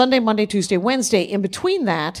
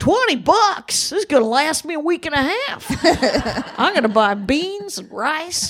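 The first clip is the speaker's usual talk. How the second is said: put-on Texan accent, pitched up; 5 semitones higher than usual. Retelling how people in San Angelo, Texas react to a tip, Texas accent. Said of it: "your accents tonight. You are on point".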